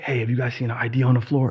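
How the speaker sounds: put-on whispered voice. Retelling walking around the office asking people: imitating a whisper. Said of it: "whispering to people".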